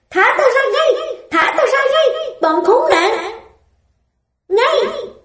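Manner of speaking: all-out, very high, shrieking scream. On seeing the doctor, she screams at him, screaming. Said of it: "nàng gào lên".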